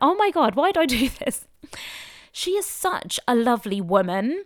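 voice on the edge of crying, choked up. Introducing a podcast guest while getting emotional: on the verge of tears. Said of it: "I'm gonna start crying again".

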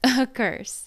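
said through a laugh, high and loud. A woman laughs off the narrator's warning, not believing it, laughing. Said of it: "she laughed".

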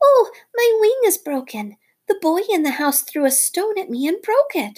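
shrill, very high, desperate outcry. Narrating a story, Darzee's wife flutters in front of Nagina: cried out. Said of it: "cried out".

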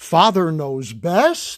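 questioning rise in pitch on the last word. Recalling how the early announcer introduced the show, rising on Father Knows Best. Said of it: "would say it more like, Father Knows Best, you know, as a question".

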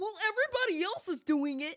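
condescending know-it-all tone. Quoting a commenter's typed reply about cheating, mocking mansplaining voice. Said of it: "I'm gonna say it in a in a mansplaining voice".

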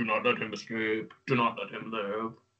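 low, soft, mild mock demonic yell. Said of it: "you hear it yelling all the time at the demons".

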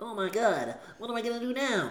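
put-on very high, childlike little kid voice. Retelling being eleven after watching Jurassic Park 3, in a little kid voice. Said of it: "That's my little [name] voice".

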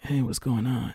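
low, rough, gruff put-on man's voice. Describing how someone sounds, imitating him in a gruff voice. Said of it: "but with a gruff voice like".

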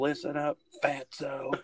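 intense, high, mild wrestler-style yell. Retelling how a wrestler screamed at an opponent: imitating Sid screaming. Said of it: "He just screamed at him".

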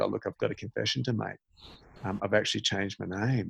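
soft, barely-there, really quiet, hushed voice. Retelling a fake confession to family and friends: imitating talking really quietly. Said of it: "was talking really quietly".

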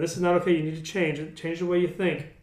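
ordinary delivery

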